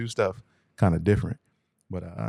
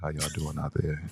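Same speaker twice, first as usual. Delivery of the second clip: put-on sexy voice, lower and quieter; 6 semitones lower, 6 dB quieter than usual. Imitating the guest's greeting to listeners: imitating Yohance's sexy voice. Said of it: "he got the sexy voice".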